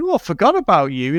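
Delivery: ordinary talk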